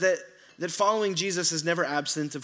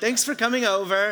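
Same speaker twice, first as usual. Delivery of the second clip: put-on prim, polite, well-mannered, high British accent; 5 semitones higher, 5 dB louder than usual. Describing children being put to bed who thank the speaker, imitating a british accent. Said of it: "They get a British accent".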